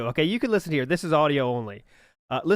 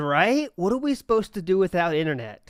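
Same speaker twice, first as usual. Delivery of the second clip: normal talking voice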